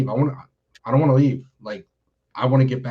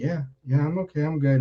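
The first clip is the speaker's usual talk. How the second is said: mock, super soft, soft-spoken voice; 3 semitones higher, 4 dB quieter than usual. Retelling a man's answer after asking him if he was all right, imitating a super soft voice. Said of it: "Like super soft, spoken word".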